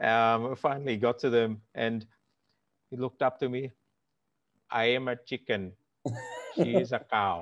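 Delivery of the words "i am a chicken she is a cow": put-on, sing-song Indian accent. Retelling what an old passenger on a flight said to the speaker, indian accent. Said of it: "I like that you do it in the accent".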